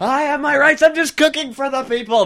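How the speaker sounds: very high yelling. Acting out a baker yelling as he is put into a police car: baker yelling. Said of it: "That's what he's yelling".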